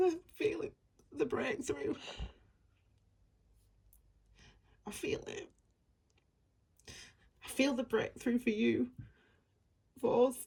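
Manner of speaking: tearful, emotional speech. Speaking to Capricorn about feeling the breakthrough, the speaker is crying. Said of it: "I'm crying because it's like a release".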